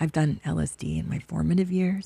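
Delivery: half-whispered, under the breath. In a two-person conversation, admitting something from the past: half-whispering. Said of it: "I don't know why I'm whispering".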